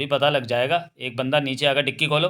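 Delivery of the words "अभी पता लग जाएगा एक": plain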